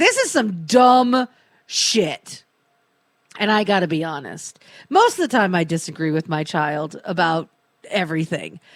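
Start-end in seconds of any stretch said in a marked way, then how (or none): 0.0-2.4 slow, dragged-out, grumbling, griping tone. Retelling a daughter's reaction to the movies: imitating Romy complaining. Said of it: "She was like".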